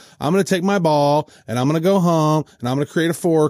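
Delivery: normal talking voice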